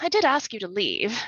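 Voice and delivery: tired sighing. Voicing Miss Blakely looking down at fallen Gregory: sighing. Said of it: "looks down at him and sighs".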